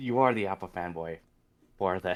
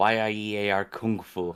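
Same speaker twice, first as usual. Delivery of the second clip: robot-like pronunciation. Saying a game title the way the robot voice pronounced it, robot pronunciation. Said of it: "I just did the robot pronunciation".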